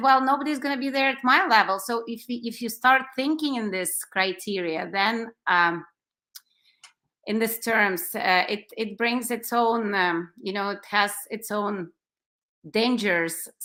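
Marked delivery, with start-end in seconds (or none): 0.0-1.8 quick, heavily sarcastic quip, pitched up. Quoting what a dancer said about going there, imitating a sarcastic remark. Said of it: "being super sarcastic".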